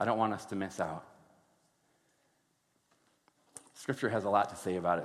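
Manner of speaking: voice getting choked up. Speaking to the church, getting choked up. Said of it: "when I get choked up so easily".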